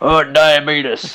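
mocking, teasing put-on delivery of "diabetes". Showing the standard mocking way of saying the word: mocking Wilford Brimley "diabetes". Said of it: "my standard, like, mocking use of the word".

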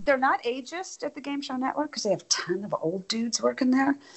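soft, hushed, half-whispered aside. Speaker in a conversation about women in TV, half-whispering.

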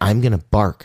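ordinary talk

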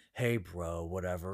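very deep, low, soft put-on bro voice. Speaker showing how they used to lower their voice, deliberately lowered voice. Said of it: "manipulate it, lower it".

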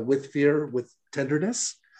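ordinary delivery

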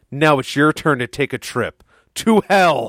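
heated, impassioned, theatrical, dramatic delivery. Quoting a line from a video game: imitating a passionate game line. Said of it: "I felt the passion in your voice".

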